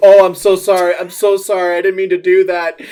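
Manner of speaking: loud, sheepish, embarrassed delivery. During a game, a player voices Mycos apologizing to the group, embarrassed and apologetic. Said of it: "you could hear Mycos just going".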